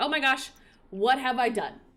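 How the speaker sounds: sudden, alarmed, panicked outburst. Retelling a story where Naveen runs out the door, acting out Naveen panicking. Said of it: "kind of starts panicking".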